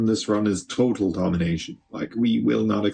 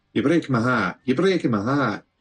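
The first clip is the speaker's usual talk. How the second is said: put-on Scottish accent; 3 semitones higher than usual. Speaker playing a video game talks to the game, put-on Scottish accent. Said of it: "I don't know why that's Scottish".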